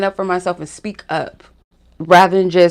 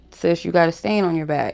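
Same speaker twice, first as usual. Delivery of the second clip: hushed, soft, discreet half-whisper; 2 semitones lower, 7 dB quieter than usual. Retelling telling a stranger in a store aisle about a stain: retelling a half-whisper. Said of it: "I whispered to her".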